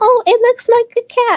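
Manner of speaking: abrupt excited shift, very high, very loud. Pinning a crochet piece, seeing it looks like a cat: sudden voice change. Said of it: "I don't know why my voice changed".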